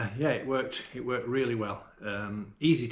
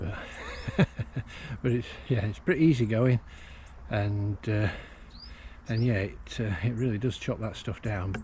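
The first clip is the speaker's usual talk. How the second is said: slightly winded, out of breath, easygoing talk. Right after showing how easily it chops the stuff down: a bit out of breath. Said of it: "I'm still a bit out of breath".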